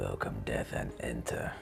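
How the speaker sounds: soft whisper under the breath. Player describing their character holding hands out; whispering to oneself. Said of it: "whisper, whisper to myself".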